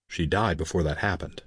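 plain

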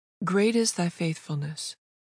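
usual speaking voice

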